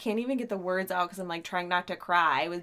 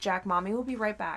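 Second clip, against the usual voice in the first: ordinary delivery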